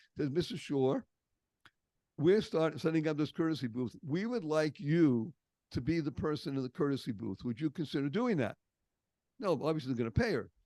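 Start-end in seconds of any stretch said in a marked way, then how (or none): none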